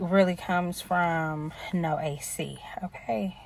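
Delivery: soft, unvoiced, conspiratorial whisper.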